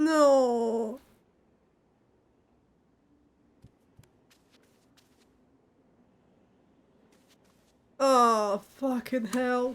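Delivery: tearful voice, crying while talking. Reacting to a game moment while crying: crying while talking. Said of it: "but I'm actually crying".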